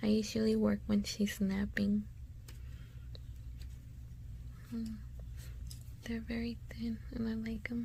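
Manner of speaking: soft, hushed, barely voiced whisper. Working on a craft project while her daughter naps, whispering. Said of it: "I'm whispering because Mia's asleep".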